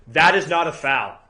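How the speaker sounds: all-out, loud, top-of-the-lungs yell. Retelling getting called for a foul again: imitating a yell at top of lungs. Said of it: "I just yell at the top of my lungs".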